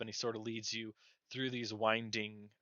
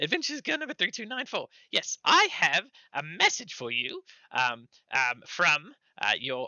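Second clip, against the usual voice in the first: high, squeaky, animated little gnome chatter; 7 semitones higher, 8 dB louder than usual. Game narrator voicing a gnome messenger, in a high squeaky gnome voice. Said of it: "a high squeaky voice".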